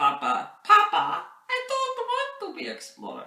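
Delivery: put-on very high, loud little Russian boy voice. Retelling a childhood talk with his parents, in a little russian boy voice. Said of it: "this is my little Russian boy voice".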